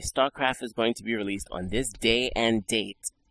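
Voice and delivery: normal talking voice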